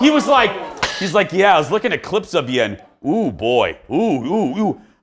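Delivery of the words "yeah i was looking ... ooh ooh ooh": repulsed, disgusted, grossed-out oohs. Retelling the executive producer looking at old clips: imitating Jeff's disgusted reaction. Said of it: "made a face like he was eating rancid meat".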